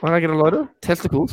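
voice breaking. Speaker jokes back at a co-host's teasing question, voice cracking. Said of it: "Your voice cracked".

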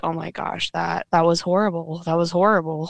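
put-on teary-eyed, frightened, fearful voice. Retelling how she reacted when the scary event came up: imitating someone teary-eyed and fearful. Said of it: "she gets a little teary-eyed".

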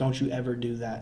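put-on stern, serious tone. Retelling a coach's serious talk after a fight: imitating a serious warning. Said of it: "I'll tell it seriously".

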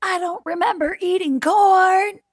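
loud, high yell, corn stretched out. Retelling what mom said, imitating her yelling it. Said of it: "she's like yelling it".

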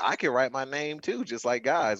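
ordinary talk

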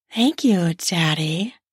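sugary, sweet-toned voice. A narrator voices their own reply to a partner, sweet voice. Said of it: "I said in my sweet voice".

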